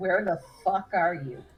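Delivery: furious, irate delivery. Telling listeners what they will hear in their head, sounding irate. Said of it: "You hear Yuki's irate voice".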